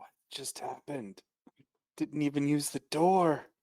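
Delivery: hushed whisper under the breath. Voicing a character asking the sister a question: whispering. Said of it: "whisper at the sister".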